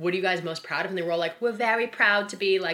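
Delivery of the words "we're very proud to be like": terrible put-on Australian accent, high-pitched. Recounting Australian Housewives cast members saying what they're proud of, in a terrible Australian accent. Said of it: "that's a terrible Australian accent".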